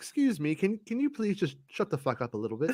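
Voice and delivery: overly courteous British manner. Imitating another speaker's british politeness, mock polite british manner. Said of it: "He's British polite, which is why he's like".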